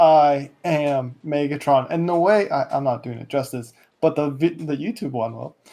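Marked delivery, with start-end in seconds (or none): none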